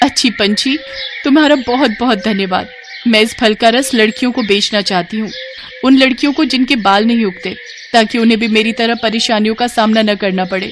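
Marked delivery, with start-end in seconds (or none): none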